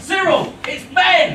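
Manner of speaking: thrilled, excited, bursting, high voice. Calling someone on the phone with news, excited. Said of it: "why the bloody hell do you sound so excited".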